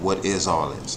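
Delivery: ordinary delivery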